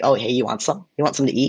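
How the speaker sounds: put-on rough-speaking countryside teenage girl voice. Explaining regional Japanese speech styles, imitating countryside teenage girls. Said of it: "teenage girls being like".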